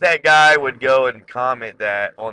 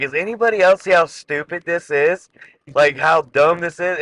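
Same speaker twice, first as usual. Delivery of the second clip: ordinary talk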